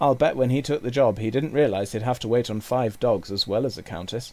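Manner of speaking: plain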